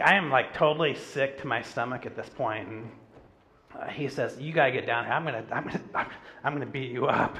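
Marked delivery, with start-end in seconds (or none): 4.4-7.4 mock hot-headed, angry, stammered stumbling speech. Retelling a phone call from a man who is mad: imitating an angry man. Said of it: "he's mad".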